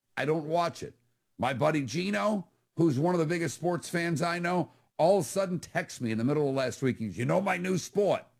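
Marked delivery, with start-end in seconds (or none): 7.2-8.2 put-on Boston accent. Retelling a friend's text about his new sport: Boston accent imitating Gino. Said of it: "he's from Boston, so I have to do it with that accent".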